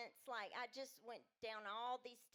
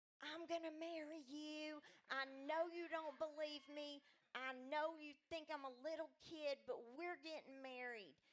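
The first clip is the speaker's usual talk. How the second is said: play-acted, restrained, low-key mild yell; 4 semitones higher than usual. Retelling meeting Rick on the stairs: imitating herself screaming. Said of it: "I started screaming at him".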